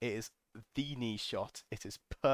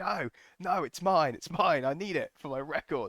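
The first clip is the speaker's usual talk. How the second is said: acted, high, loud, long drawn-out scream; 6 semitones higher, 5 dB louder than usual. Retelling a rush at the front line: imitating own scream. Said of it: "I'm screaming".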